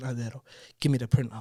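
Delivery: put-on pleading, begging voice. Retelling begging a driver for the printout: retelling own begging. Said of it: "I'm begging him".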